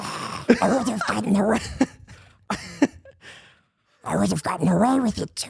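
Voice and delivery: terrible, botched put-on creature voice. Attempting a Gollum impression: terrible Gollum impression. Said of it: "terrible Gollum impression".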